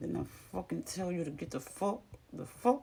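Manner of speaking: jaw-locked words spoken through clenched teeth. The speaker shows the new way to scold without yelling: talking through clenched teeth. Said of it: "I'm gonna start talking with my teeth".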